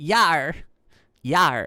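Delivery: talking like a pirate. On Talk Like a Pirate Day, the speaker joins in: pirate voice. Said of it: "I can talk like a pirate too".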